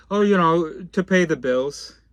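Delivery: sarcastic put-on parody voice. Imitating people explaining their job: mocking imitation of people. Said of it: "I'm mocking all of you".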